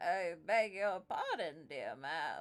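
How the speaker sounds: put-on old, elderly turtle character voice. Voicing an old turtle greeting two women at his door: old turtle character. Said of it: "you're an old turtle that lives in a shack".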